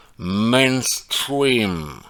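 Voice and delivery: "mainstream" said carefully in proper English accent. Joking that english teachers would approve, careful english accent on mainstream. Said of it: "vous avez vu mon accent mainstream. Tous mes profs d'anglais seraient très heureux de m'entendre prononcer ça ainsi".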